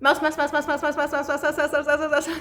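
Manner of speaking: rapid-fire, rattled-off repetition, as fast as possible. Leading listeners at home in a repetition exercise, saying it as fast as possible. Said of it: "Let's say mouse as fast as we can".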